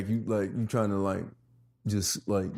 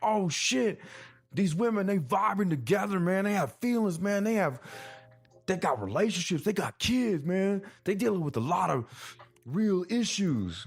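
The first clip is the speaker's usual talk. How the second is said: over-the-top put-on voice, very high and swooping; 10 semitones higher than usual. Retelling his own reaction to the women on the show, put-on exaggerated voice. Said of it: "I know I'm using that voice".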